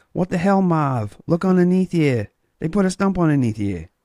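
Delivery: put-on high-pitched New England accent. The speaker retells what he said to Marv, in an attempted New England accent. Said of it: "I do my best like New England accent".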